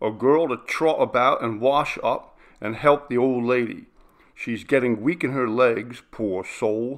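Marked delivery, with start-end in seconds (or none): none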